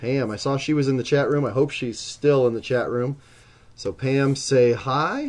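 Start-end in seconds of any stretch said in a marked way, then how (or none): 3.9-5.3 voice breaking and cracking mid-phrase. Announcing league results, greeting a winner in the chat room, voice cracking. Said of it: "voice crack".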